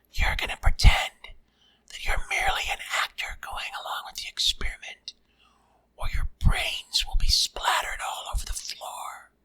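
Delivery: small, soft whisper spoken close. Narrating a story as a voice threatens him at gunpoint, tiny whispering voice. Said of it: "a tiny voice whisper in my ear".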